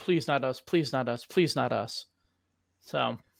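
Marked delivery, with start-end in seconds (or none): 0.0-2.1 imitated pleading voice. Imitating coaches asked who will be number one: imitating coaches pleading. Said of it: "And they go".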